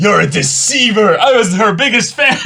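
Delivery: high, loud, hurt, outraged shout.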